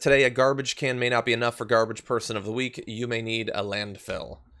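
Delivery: ordinary delivery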